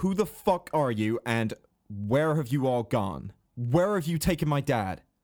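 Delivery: enraged, raging, threatening voice. A player's character grabs a gnome in the vines and interrogates him, in a rage. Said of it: "And so what she's going to do is go and try and grapple one of them ready so that someone can cast something on them or someone can do something. So she's going to run into a rage and grab ... Goliath".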